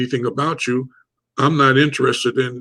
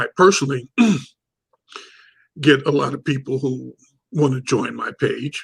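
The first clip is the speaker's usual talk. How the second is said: voice catching, cracking and breaking. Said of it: "My voice is cracking".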